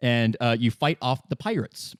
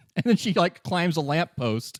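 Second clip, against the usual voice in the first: ordinary delivery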